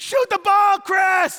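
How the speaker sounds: shrill, very high, very loud, ear-splitting drawn-out scream. Retelling a basketball game, imitating the coach screaming at the player. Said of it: "She's screaming".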